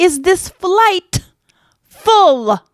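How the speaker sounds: very high, very drawn-out holler. Retelling a passenger yelling to the flight attendant: imitating someone yelling. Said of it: "Why are you yelling?".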